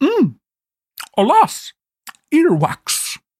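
talking with full mouth. Reading a script as a character eating a bean: acting with mouth full. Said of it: "Your voice acting with something pretend to be in your mouth".

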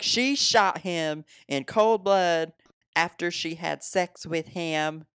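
put-on TV-anchor outrage, high, slow, drawn out. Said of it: "That's my Nancy Grace impression".

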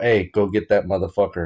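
ordinary talk

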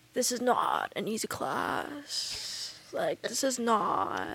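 soft, swooping, self-important, pretentious professor voice. Recalling a professor's first words to the class, imitating a pretentious professor. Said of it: "he was just like kind of a little pretentious".

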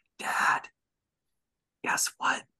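hushed, secretive, confiding whisper. Retelling what a child whispered into their ear: imitating a whisper. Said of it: "she whispers".

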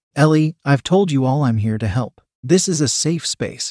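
plain reading voice

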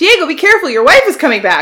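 loud, high yell across a room. Retelling how Frida yelled from behind a pillar: imitating Frida yelling a warning. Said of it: "she would yell".

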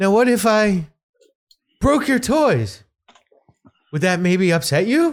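annoying, high, dumb-sounding provoking tone. Retelling how a ghost hunter spoke to a spirit: imitating a Ghost Hunters guy. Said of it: "he talks like that".

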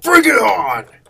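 put-on loud, high voice with a Brooklyn accent. Player voicing their character Donald during a tabletop game: Donald in Brooklyn accent. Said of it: "it's more of a brooklyn accent".

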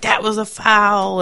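high-pitched hollering yell, "foul" drawn out. Retelling what another parent at an away game kept yelling: imitating a parent yelling. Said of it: "yelling a lot".

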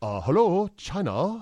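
light put-on Chinese accent. Trying a bit after being told no twice, in a light chinese accent. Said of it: "I'll do a light Chinese accent".

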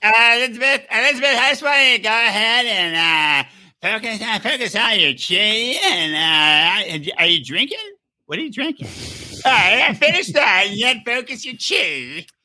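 slow, high, halting voice with stretched uh sounds. Acting out the friend as an energy healer speaking to Elizabeth: imitating Howie. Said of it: "That's what he sounds like".

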